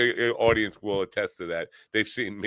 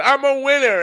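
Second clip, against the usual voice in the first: shouted at very high pitch; 8 dB louder than usual. Retelling a stand-up moment, imitating own past yell. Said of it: "I did stand up and I shouted".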